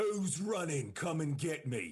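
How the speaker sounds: defiant yelling. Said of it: "I just shout over the wall".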